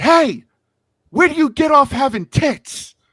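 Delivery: put-on yelling, very high-pitched and loud. Retelling walking up to him at the booth, retelling a yell. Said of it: "I yelled at him and I said".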